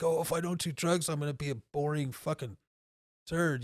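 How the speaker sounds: usual speaking voice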